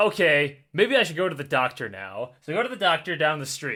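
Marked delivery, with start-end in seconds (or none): none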